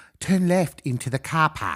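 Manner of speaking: slow, put-on Australian accent. Imitating navigation directions given by Siri in the car, Siri Australian voice. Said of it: "I changed my Siri voice to an Australian voice".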